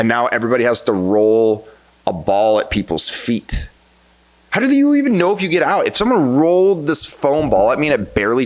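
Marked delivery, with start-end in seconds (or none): 4.5-8.5 angry, heated, high, swooping, worked-up rant. Ranting into his microphone about a school's parents' protest, angry. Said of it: "Sorry, I'm now I'm angry".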